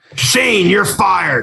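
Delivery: rough, creaky, rasping voice. Doing another impression, firing Shane: Vince McMahon impression. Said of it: "you wanna hear another Vince impression".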